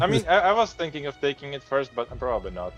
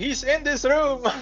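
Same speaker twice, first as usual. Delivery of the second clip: shouting, much higher pitch; 10 semitones higher than usual. A player describing his character's action in a scene: shouting. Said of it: "in my burqa shout".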